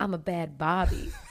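put-on East Coast American accent. Quoting how she heard a woman calling herself a Barbie, East Coast accent. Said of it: "but with an East Coast accent".

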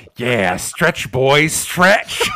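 mock sadistic taunting tone. Recounting a scene where a sister holds her departing brother's arm, acting out sadistic taunting. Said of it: "it's like sadistically like".

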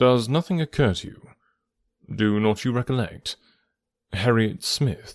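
ordinary delivery

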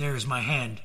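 ordinary delivery

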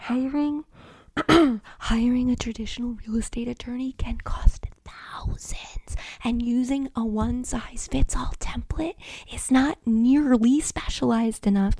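timid, hushed librarian voice, afraid of being loud. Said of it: "as a librarian who's afraid of talking too loud".

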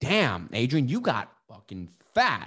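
blunt, swooping, abrupt blurt. Retelling what a best friend said at the door: imitating Gilbert's blunt remark. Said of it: "just blunt".

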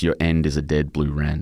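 ordinary talk, nothing marked

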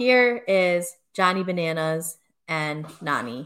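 ordinary talk, nothing marked

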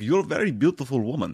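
terrible put-on European accent. Describing a film's German cinematographer character, quoting him: terrible put-on European accent. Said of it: "that was a terrible accent".

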